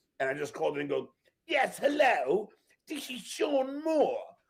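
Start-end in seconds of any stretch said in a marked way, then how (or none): 1.5-4.2 very bad fake English accent, slow and high. Speaker retells calling in under a made-up name, worst english accent. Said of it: "with the worst English accent".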